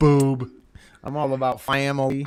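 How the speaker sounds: put-on Louisiana accent. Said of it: "he's talking with a Louisiana accent".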